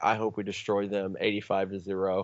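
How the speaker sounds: ordinary talk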